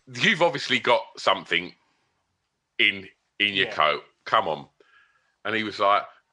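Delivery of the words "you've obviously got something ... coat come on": ordinary talk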